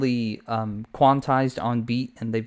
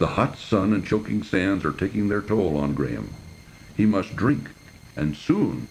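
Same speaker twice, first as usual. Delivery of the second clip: pitched-down game narrator voice; 4 semitones lower than usual. Trying an impression to show how the video's voices sound, King's Quest V narrator impression. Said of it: "impression here of the narrator from King's Quest five".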